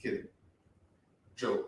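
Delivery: put-on deadpan, non-jokey, unsmiling tone. Retelling how he says he was only joking: imitating a non-smiling, non-jokey tone. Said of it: "In the most non-smiling, just non-jokey tone".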